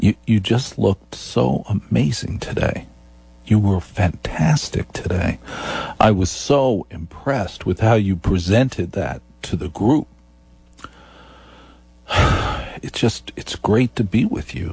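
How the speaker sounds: very slow, unhurried, low-pitched register. Demonstrating a sexier voice on a phone call: very slow, low register. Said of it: "I speak very slowly to you".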